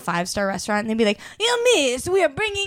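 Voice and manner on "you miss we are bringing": posh, high, put-on Italian accent. Speaker imitates staff at a five-star restaurant bringing dessert, in an italian accent. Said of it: "I'm trying to do an Italian".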